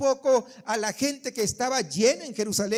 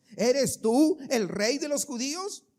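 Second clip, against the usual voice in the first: plain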